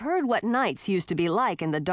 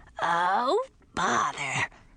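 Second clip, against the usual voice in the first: raspy lizard voice swooping up and down. Aunt Grisina, caught eating hamsters, answers in a raspy lizardy voice. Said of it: "rasped Grisina in her lizardy voice".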